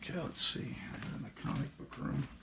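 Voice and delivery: soft, very quiet, hushed late-night whisper. Host recording an episode while his wife may be asleep upstairs, whispering. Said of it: "Why am I whispering?".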